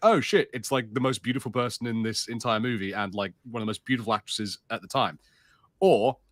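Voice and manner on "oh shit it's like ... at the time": usual speaking voice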